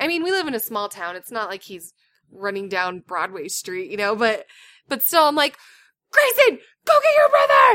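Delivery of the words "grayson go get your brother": very high, loud shout. Retelling kids running off in a community room, the speaker reenacts screaming to Grayson. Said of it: "I'm screaming over all the moms and the kids".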